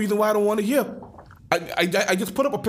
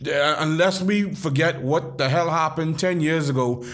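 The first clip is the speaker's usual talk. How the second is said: ordinary talk, nothing marked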